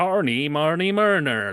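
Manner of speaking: put-on West Country accent. Explaining heavy Cornwall and Devon accents, citing a Hot Fuzz scene: Hot Fuzz farmer accent. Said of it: "he's kind of like".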